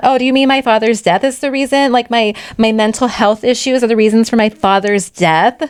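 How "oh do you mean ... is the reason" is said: put-on heavy sarcasm, much higher. Retelling how a patient answered her doctor's question, with mock heavy sarcasm. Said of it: "Like heavy on the sarcasm".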